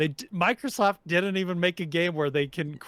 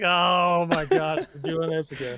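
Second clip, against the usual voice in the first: put-on unexcited voice. Imitating the director talking about another character: unexcited Sakurai impression. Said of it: "less and less excited about it".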